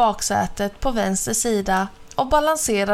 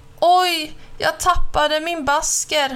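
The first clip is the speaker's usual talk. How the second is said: high, called-out cry; 6 semitones higher than usual. Having thrown her beret out the car window, a daughter calls out to her father. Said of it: "ropade hon".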